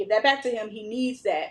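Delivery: normal talking voice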